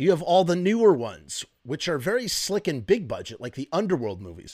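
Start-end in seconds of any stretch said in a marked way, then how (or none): none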